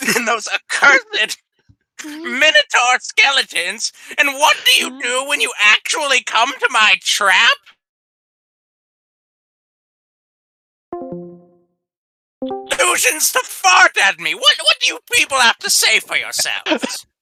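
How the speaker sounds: high-pitched nagging, scolding harangue. Game master voicing a woman nagging the adventurers in the hall, nagging. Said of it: "pointing at you and nagging you".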